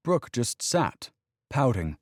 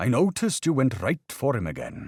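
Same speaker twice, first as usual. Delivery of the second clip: put-on Welsh accent, older voice; 4 semitones higher than usual. Retelling what an older coach said after the game: deep Welsh accent. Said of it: "in his deep Welsh accent".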